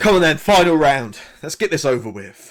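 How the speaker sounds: loud, high, impatient calling.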